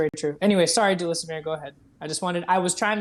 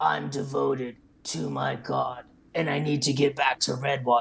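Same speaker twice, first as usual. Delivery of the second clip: rough, low, gruff knightly voice; 4 semitones lower than usual. Retelling a paladin's reply to the speaker's question, in a gruff paladin voice. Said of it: "his gruff voice said".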